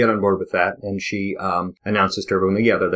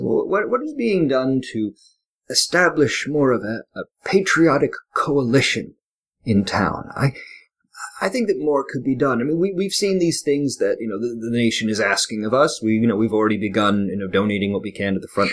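put-on thin reedy old-man voice; 3 semitones higher than usual. Voicing the old man in town as he steps up to address everybody: thin, reedy voice. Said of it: "kind of a thin, reedy voice".

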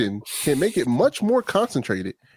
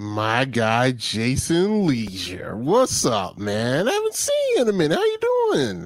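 slow, low, sluggish, half-asleep voice; 5 semitones lower than usual. Reading a greeting to a buddy on air, slow-sounding voice. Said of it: "You sound a little slow".

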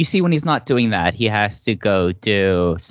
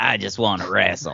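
fiery wrestling-promo delivery; 3 dB quieter than usual. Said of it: "that fiery promo James Gibson cut".

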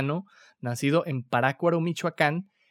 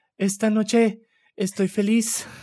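high, slow, drawn-out concert performer's voice; 5 semitones higher than usual. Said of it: "Voy a tratar de hacer la voz de [name]".

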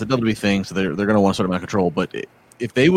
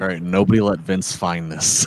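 normal talking voice

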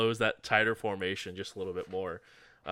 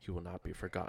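hushed, quieter whisper; 8 dB quieter than usual. A character pulls someone close in a hug and says, whispering. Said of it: "he does whisper".

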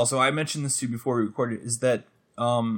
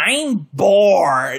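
whiny put-on movie-character voice; 6 semitones higher, 8 dB louder than usual. Describing an actor's Grinch performance: whiny Grinch voice. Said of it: "he literally delivers all of his lines like that".

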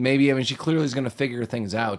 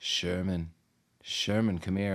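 vampire-like beckoning call, lower and quieter; 5 semitones lower, 7 dB quieter than usual. Describing a woman on television calling a kid to come closer, with a vampire-like beckoning call. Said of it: "calls to him like a vampire".

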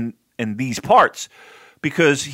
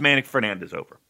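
ordinary talk, nothing marked

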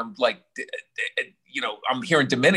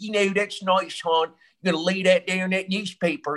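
put-on Baltimore local accent, pitched up; 6 semitones higher than usual. Speaker imitates how people around him talked, in a Baltimore accent. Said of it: "Baltimore accent".

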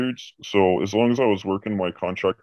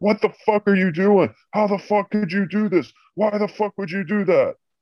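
mock shrill, very high, cursing, berating yell; 11 semitones higher than usual. Retelling how a boss berated staff: imitating a boss berating staff. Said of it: "you can hear this guy just berating somebody".

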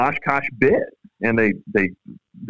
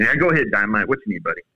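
usual speaking voice

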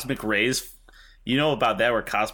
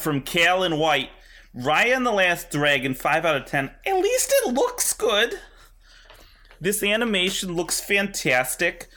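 put-on imitation voice, high and swooping; 8 semitones higher than usual. Reading out a film review as Fran: Fran voice. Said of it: "I'm gonna put on my best Fran voice for this".

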